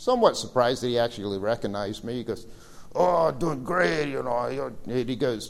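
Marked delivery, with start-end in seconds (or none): 2.9-4.7 put-on heavy, slow, thick, drawn-out Romanian accent. Retelling a man's reply when he recognized the speaker, in a thick Romanian accent. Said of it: "in his thick Romanian accent".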